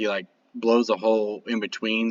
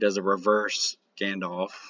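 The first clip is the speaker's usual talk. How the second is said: usual speaking voice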